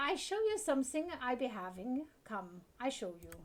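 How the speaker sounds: clumsy, bad, put-on German accent. Speaking in character to a listener, in a bad German accent. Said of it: "I do a better French accent than a German accent".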